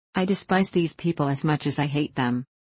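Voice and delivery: ordinary delivery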